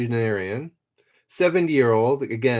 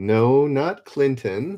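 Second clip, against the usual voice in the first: normal talking voice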